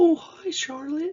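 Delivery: put-on very high, stretched, drawn-out baby talk. Describing how adults greet a two-year-old, the speaker demonstrates higher, drawn-out baby talk. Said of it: "my voice actually there went higher, extended out".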